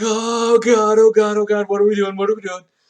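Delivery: frantic, terrified, high panicked screaming. Game master voicing two intimidated characters who look at each other: panicked screaming. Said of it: "they like look at each other and scream".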